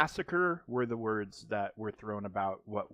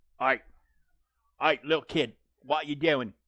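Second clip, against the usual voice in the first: loud, high, laid-on fake put-on British accent; 5 semitones higher, 7 dB louder than usual. Speaker talks to a little kid in a fake british accent. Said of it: "I'm using a fake ass British accent".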